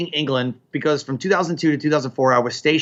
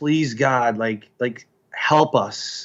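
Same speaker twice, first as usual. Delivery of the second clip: very slow, drawn-out, pleading and begging; 2 semitones lower than usual. Retelling childhood prayers in church: imitating own past begging. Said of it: "just begging him, like".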